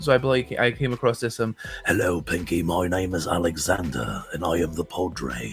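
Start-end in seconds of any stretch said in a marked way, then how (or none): 1.9-5.5 dark, raspy, very low baritone, slow. Demonstrating a voice he came across while experimenting, in a very dark, raspy voice. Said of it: "just talking like this, a very dark, raspy voice".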